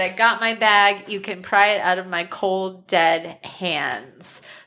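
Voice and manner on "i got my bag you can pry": ordinary delivery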